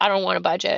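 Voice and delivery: ordinary delivery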